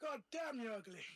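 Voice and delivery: loud shout in full put-on character voice. Casting Vicious Mockery on a spider in a game: in-character shout. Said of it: "It just shouts that to the spider".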